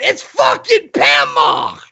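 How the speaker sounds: acted-out thrilled cry, light and excited. Retelling being spotted at VidCon: imitating Sofane screaming. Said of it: "he started screaming".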